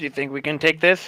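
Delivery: low, hushed, conspiratorial half-whisper aside. Playing a character, half-whispering a question to Crisis as something closes in behind them. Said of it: "I'm gonna whisper to Crisis".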